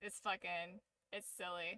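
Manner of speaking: normal talking voice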